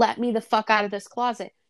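mock desperate, panicked pleading voice. Describing a movie scene, the speaker acts out a trapped woman's plea: imitating a desperate plea. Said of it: "you can hear the desperation in her voice".

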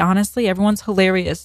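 normal talking voice

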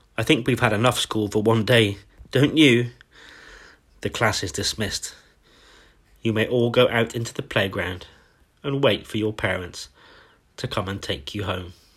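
ordinary delivery

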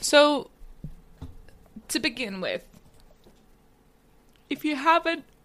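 words drawn out and distorted by a yawn. Starting to talk about the episode, speaking through a yawn. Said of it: "sorry, I'm yawning".

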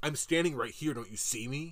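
mock-angry man's voice, getting mad in an outburst. Retelling how a man waiting in line complained at the counter, mock-angry. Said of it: "The person in front of me gets all mad".

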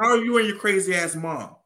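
mock teasing, joking, very high and loud. Quoting what a guy says about the speaker's mom, retelling a joking remark. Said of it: "That's what he says in a jokingly way".

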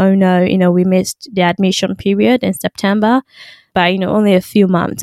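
ordinary delivery

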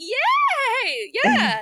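giddy, swooping, very high shriek. Recalling watching fake plastic bats whipped around on string: retelling giddy screaming. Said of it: "I was like giddily screaming like".

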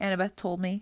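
plain reading voice

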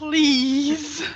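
pleading, begging one-word delivery. Voicing a character begging the companions with a stern look: pleading. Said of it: "which also is pleading".

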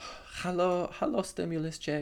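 poor put-on German accent. Talking about stimulus checks, the speaker greets one in a bad German accent. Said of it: "That was a bad German accent".

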